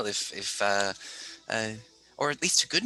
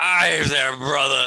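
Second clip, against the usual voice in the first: put-on drunk, tipsy dwarf character voice, louder and slower; 3 semitones higher, 8 dB louder than usual. Narrating a scene, voicing a drunk dwarf who greets the listener, drunk dwarf voice. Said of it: "he's a little drunk".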